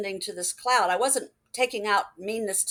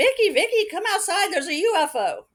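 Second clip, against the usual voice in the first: very high, loud hollering, put-on; 10 semitones higher, 5 dB louder than usual. Recounting running outside to call Vicky, retelling a holler.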